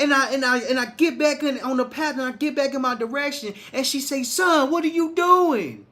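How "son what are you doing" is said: put-on mother's scolding yell. Retelling a wrong turn on the way to the store: imitating mom yelling. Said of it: "my mama yelled at me".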